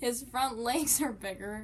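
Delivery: chuckling while talking. Describing an animal's bigger front legs after fumbling the word, laughing.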